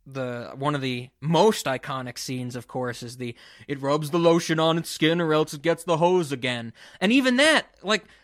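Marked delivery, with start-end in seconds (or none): none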